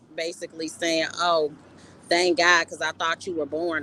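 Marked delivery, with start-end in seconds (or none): none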